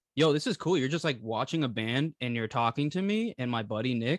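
plain

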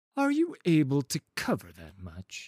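wary, doubting, suspicious tone. Narrating a card game, the merchant asks his question suspiciously. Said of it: "Asked Henmar suspiciously".

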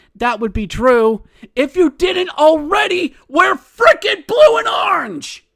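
loud, high-pitched yell.

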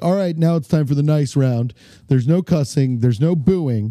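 ordinary delivery

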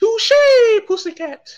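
very high squeaky little cartoon mouse voice. Comparing how someone sounds to a cartoon, saying it like the Tom and Jerry cousin mouse. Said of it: "he sounds like the remember Tom and Jerry when Jerry had that little cousin mouse".

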